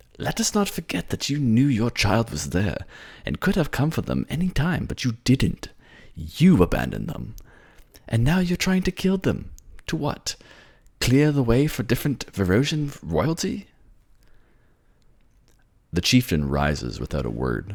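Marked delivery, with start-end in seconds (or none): 0.2-13.7 bristling, heated, temper flaring, pitched very high. One of the two kings confronting the chieftain; temper flaring. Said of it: "He bristles at that, and some of that famous temper shoots back into his tone. / Now, I'm appealing to you as a man in love, / and everything to the two kings that sit before you desperately trying to".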